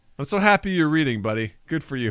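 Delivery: condescending. Hearing that someone is reading a ghost book, the speaker sounds condescending. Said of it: "That sounded so condescending".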